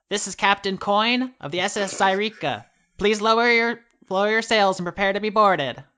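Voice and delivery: high, loud call, projected to carry far. Narrating a scene, the speaker voices a captain hailing the ship: projected Captain Coin voice. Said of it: "you hear a projected voice".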